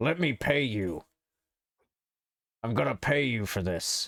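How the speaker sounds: put-on gruff anime villain voice. Acting out a customer offering to pay, voice like Piccolo from DBZ Abridged. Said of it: "the voice I did for that just kinda reminded me of fucking Piccolo".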